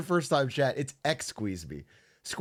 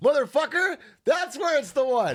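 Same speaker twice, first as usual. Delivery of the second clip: shrill, very high shouting outburst; 10 semitones higher, 3 dB louder than usual. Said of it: "why are you yelling at us?".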